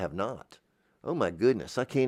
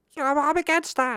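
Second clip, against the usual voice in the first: very high, squeaky helium-style voice; 4 dB louder than usual. Mocking what detractors will say, in a high-pitched helium voice. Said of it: "in the high-pitched helium voice".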